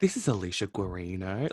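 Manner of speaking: polished, clearly enunciated professional phone voice. Teasing the other speaker about answering the phone at work, imitating Alicia Guarino's phone voice. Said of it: "do you really enunciate?".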